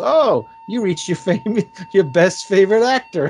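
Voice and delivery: laughing while speaking.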